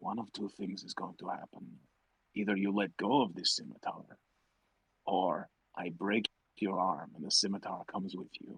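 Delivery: hushed, careful whisper close to the ear. A player's character leans in to speak into an opponent's ear, careful whisper. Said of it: "very carefully whisper".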